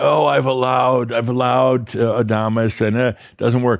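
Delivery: play-acted, high-pitched whining. Imitating listeners who complain that allowing fails: imitating whining listeners. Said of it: "I hear some of you whining".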